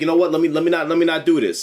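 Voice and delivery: plain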